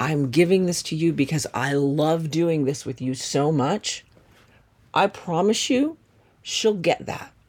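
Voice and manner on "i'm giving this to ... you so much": ordinary talk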